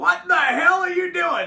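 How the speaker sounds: high, loud yelling. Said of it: "he's kinda fucking yelling at me".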